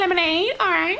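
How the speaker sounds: very high, squeaky drive-thru cashier voice.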